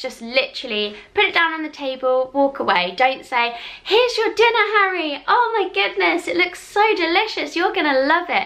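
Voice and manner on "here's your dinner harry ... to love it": overdone fake enthusiasm, high and gushing. Speaker retelling serving someone dinner, falsely cheerful. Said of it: "the falseness in my voice".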